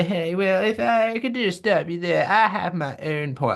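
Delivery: weird, high-pitched, posh cartoonish voice. Imitating a posh person who interrupted everyone, in a weird South Park voice. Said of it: "devolved into some sort of weird South Park voice".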